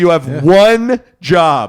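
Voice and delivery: very loud, exasperated, frustrated yell. Recounting what they say to their phone when music won't load, retelling a yell. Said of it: "yelled at my phone multiple times".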